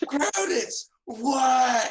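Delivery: very high screaming yell with a long "what". Voicing a character who hears his name and answers: yelling in character. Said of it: "about to have a screaming conversation".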